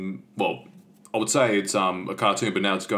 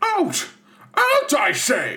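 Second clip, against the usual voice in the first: very high, loud, slow, swooping voice; 5 dB louder than usual. Imitating Wendy's father ordering someone out: Mister Darling voice. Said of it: "Mister Darling".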